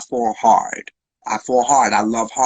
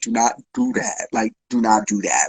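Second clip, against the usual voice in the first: mock crying through every word, sobbing, tearful. Retelling own reply to a partner's tearful words: retelling own words while bawling. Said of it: "and I'm bawling".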